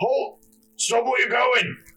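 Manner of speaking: very high-pitched roaring. A voice calls out from down the thoroughfare at people walking into the center: roaring voice. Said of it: "you hear this like roaring voice".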